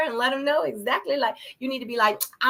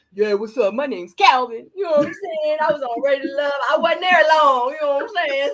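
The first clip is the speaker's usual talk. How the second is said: put-on New York accent; 4 dB louder than usual. Imagining a call-in show, the speaker plays the next caller in a put-on new york accent. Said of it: "Why you gotta put the New York accent though?".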